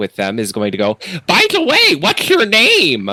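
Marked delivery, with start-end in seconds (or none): 1.3-3.1 shrill, high, sing-song, swooping fish-man voice. Narrating a game scene, voicing the fish man with the group: fish man impression. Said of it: "doing his best impression of this man, this fish man person".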